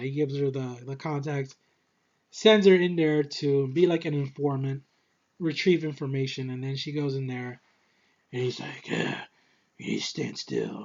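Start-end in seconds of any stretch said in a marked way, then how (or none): 8.9-10.8 breathy, whispered vigilante hero voice. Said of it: "I don't know why I'm doing the Bale voice".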